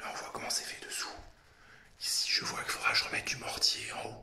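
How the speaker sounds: whispering. Showing the inside of a tank just climbed down into, whispering. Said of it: "Pourquoi je chuchote d'ailleurs ?".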